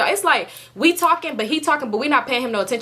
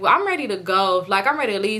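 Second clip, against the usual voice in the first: ordinary talk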